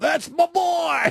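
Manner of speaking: mock yell, very high-pitched and loud. Recounting a clip, the speaker imitates the kid's dad: retelling a father's yell. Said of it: "You could hear the dad of the kid yell".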